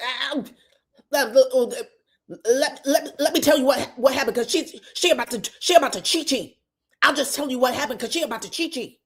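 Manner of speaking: halting, stammering speech with repeated words. Retelling a reality show moment, imitating a nervous stutter. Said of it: "She immediately starts stuttering".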